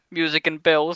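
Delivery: plain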